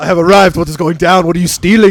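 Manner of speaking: put-on Belgian accent. Retelling kicking a door in, Van Damme Belgian accent. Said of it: "I speak in a in a Belgian accent".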